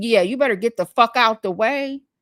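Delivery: low, quiet mumbling. Retelling what she mumbled after nearly being hit by a cart: imitating someone mumbling. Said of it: "then I heard her mumble".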